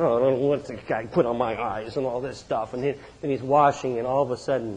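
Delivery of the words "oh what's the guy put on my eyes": mock mumbling under breath, lower, quieter, slower. Speaker imagines the man sent to wash his eyes, retelling a mumble under breath. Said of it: "I can just hear him mumbling under his breath".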